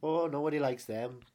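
put-on Liverpool accent. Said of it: "Sounds like a Beatle".

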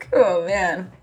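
laughing through tears, crying and laughing together. Reacting to a sad memory of a lost bike, crying and laughing at once. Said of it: "you're crying and laughing at the same time".

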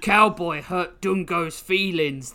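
hideous, high, wailing man-ape voice. Narrator reads the hideous man-ape's line to the assembled villains: wailing man-ape voice. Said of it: "the hideous man-ape wailed".

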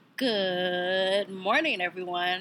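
put-on morning radio host voice, drawn-out "good". Opening a podcast episode, greeting everyone in a radio voice. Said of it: "in my radio voice".

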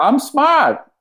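put-on high-pitched Boston accent. Acting out a famous movie line as Fredo: Boston accent as Fredo. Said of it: "Wahlberg sauce on the way that you said it".

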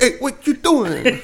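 put-on high, overdone Brooklyn New York accent. Retelling what a man said, the speaker imitates him with a new york accent. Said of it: "He's got that weird New York".

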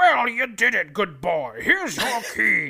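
gruff voice with pitch swinging widely. Retelling what Anorak says when handing over the key: gruff Anorak voice. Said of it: "a nice gruff voice".

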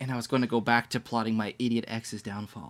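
put-on little, snooty, disdainful, nose-in-the-air teen voice. Quoting a line from a YA novel, in a snooty Katie voice. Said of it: "I don't mean to give her such a little snooty voice there".

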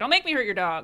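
ordinary talk

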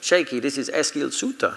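put-on Swiss accent. Retelling when Eskil Suter came on the phone to him, Eskil Suter impression. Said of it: "Was that not a good Swiss accent?".

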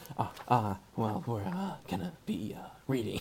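low, halting stammer full of uhs. Opening the advice segment to the guests: Jeff Goldblum voice. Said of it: "I can't do Jeff Goldblum".

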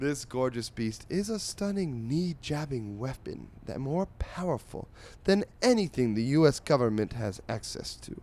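grand, fancy, reading-aloud voice. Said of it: "I will attempt to read this in a fancy voice".

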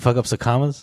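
ordinary talk

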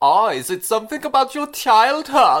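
clumsy fake German accent. Retelling a film scene, the speaker voices Freud in a bad German accent. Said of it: "about as much research into doing a German accent as [name] did just then".

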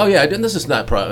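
ordinary delivery

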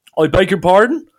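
put-on somewhat stronger, thicker Dublin accent. Retelling a phone call, the speaker voices one caller in a bit more Dublin accent. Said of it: "bit of a more Dublin accent".

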